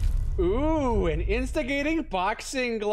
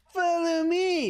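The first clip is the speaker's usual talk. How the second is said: mocking imitation, pitched high and slow. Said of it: "That's what you sound like!".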